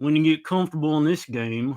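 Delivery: put-on cowboy voice. Agreeing and repeating the player's quote, imitating Chris Paddock like a cowboy. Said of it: "you feel like he's almost like".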